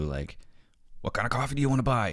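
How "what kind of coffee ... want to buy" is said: high-pitched, fast shouting voice. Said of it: "the barista coming and shouting at you".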